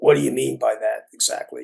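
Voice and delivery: rasping, creaky, rough voice. Retelling what Earl Kaplan asked after the speaker's remark, in Earl Kaplan's raspy voice. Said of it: "in his raspy voice".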